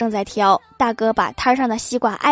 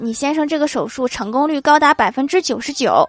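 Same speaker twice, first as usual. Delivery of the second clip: ordinary talk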